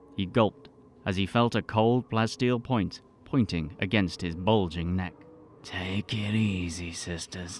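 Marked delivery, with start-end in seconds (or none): 5.6-7.6 muttering coolly, much quieter, slower. A narrator reads a man's line to the armed women surrounding him, muttering coolly. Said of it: "he muttered coolly".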